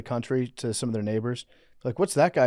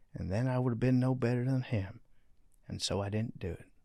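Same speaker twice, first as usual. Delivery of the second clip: put-on Southern politician voice, quieter; 6 dB quieter than usual. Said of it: "that was a perfect Bill Clinton impression".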